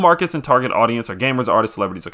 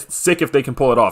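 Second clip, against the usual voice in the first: plain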